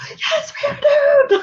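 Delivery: play-acted scream, very high, drawn out, full volume. Retelling riding the ghost tour trolley: imitating own screaming. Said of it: "Like, screaming".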